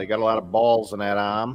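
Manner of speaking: joking, put-on Massachusetts local accent. Quoting a taunt from an opposing baseball team: Massachusetts accent. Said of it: "that's my Massachusetts accent".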